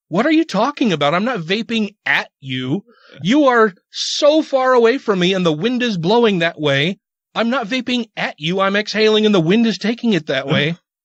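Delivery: put-on angry tone. Retelling a reply to a stranger after getting a little mad: retelling angry retort. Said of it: "then I got a little mad and I'm like".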